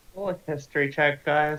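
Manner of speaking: sounding defeated. Asking the players to roll a history check, sounding defeated. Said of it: "You sound so defeated".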